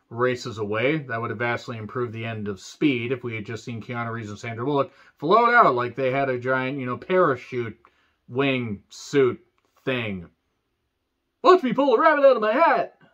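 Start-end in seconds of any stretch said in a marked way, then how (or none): 11.4-12.8 terrible, very high-pitched cartoon moose voice. Ranting about the ending of Speed: terrible Bullwinkle impression. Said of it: "Terrible Bullwinkle impression".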